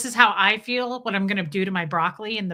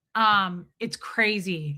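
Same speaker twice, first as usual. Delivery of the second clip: ordinary talk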